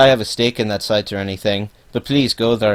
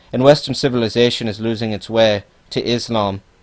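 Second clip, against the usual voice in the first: usual speaking voice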